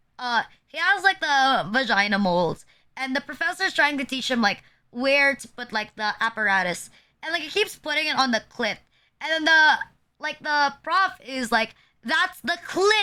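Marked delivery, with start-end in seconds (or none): 12.1-13.1 thick put-on Filipino accent, pitched up. Retelling a professor correcting a student, in the most filipino accent. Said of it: "like in the most Filipino accent".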